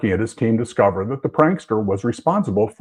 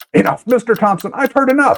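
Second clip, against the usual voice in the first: very high, frantic, panicked outcry; 13 semitones higher, 4 dB louder than usual. Reading a story, a frightened character cries out for the telling to end: crying out in panic. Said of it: "Henry cried as he started to panic".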